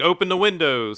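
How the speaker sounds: mock crazed madman yell, high and loud. Retelling a game scene where a madman starts yelling: imitating a madman yelling. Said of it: "he just started f-, yelling, like".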